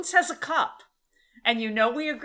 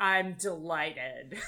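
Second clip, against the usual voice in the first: put-on sarcastic tone, lower and quieter; 6 semitones lower, 6 dB quieter than usual. Speaker recaps a scene where the alien compliments and Bones replies: imitating sarcastic Bones. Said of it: "Bones is so sarcastic".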